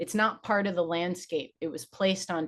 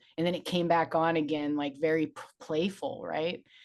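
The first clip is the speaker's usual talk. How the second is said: normal talking voice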